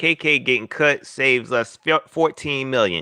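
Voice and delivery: ordinary delivery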